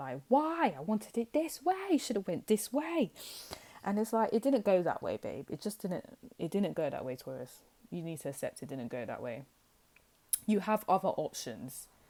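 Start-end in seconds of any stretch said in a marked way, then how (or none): 0.3-3.1 high, upset whining voice. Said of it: "you're getting really upset".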